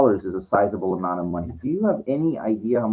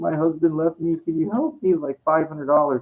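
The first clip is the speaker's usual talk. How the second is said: tearful, crying, pleading voice; 6 semitones higher than usual. Retelling a woman at the door asking for money: imitating a woman crying. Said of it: "outside my house and crying".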